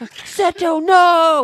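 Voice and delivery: shrill, very high-pitched, very loud outcry. Imitating a little brother who calls out for Seto, Mokuba pleading. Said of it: "That's what he always be like".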